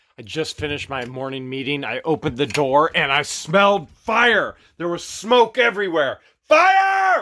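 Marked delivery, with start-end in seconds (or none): 6.5-7.3 yell, higher and louder. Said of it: "he starts screaming".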